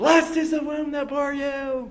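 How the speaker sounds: very high call from afar. Acting out a woman at the back of a crowd calling to Jesus; woman calling out. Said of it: "a woman in the back of the crowd raises her voice".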